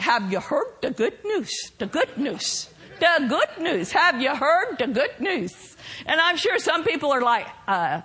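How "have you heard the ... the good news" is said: put-on Minnesota accent, laid on strong. Quote what Brother Tony says when he goes out, in his real strong Minnesota accent. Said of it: "he has a real strong Minnesota accent".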